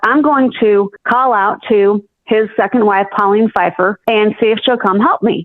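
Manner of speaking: plain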